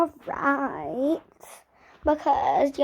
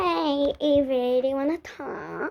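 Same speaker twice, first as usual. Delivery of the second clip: put-on fake niceness, obviously not natural. Keeping her expression nice though she wants to punch her: fake nice voice. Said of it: "Why did you change your voice?".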